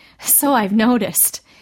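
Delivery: laughing ruefully. [name] agrees after Neil says Granny isn't as frail as she looks, rueful laugh. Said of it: "[name] laughed ruefully".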